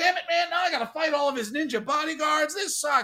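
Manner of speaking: very high, very loud, booming yell. Retelling a scene where a guy yells at his caller on the phone, retelling a yell. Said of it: "He's yelling at Weasel and he's like".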